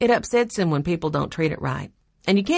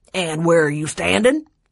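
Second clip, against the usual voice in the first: gruff, growling voice; 4 dB louder than usual. A narrator reads the man's question to Benny, growled. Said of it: "The man growled".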